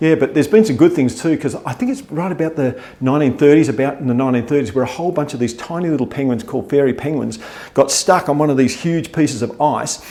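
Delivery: ordinary talk, nothing marked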